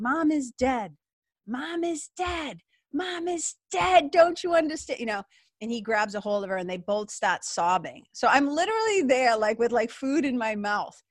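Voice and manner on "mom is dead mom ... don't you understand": full-throated, high, drawn-out screaming outburst. Recounting a scene, the speaker acts out the daughter's lines, retelling her screaming. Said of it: "she just starts screaming like".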